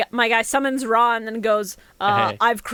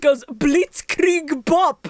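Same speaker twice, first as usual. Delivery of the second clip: put-on plain delivery with a German accent; 5 semitones higher, 3 dB louder than usual. Telling friends about a game card's attack line: Nubian Guard German accent. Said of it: "in his German accent".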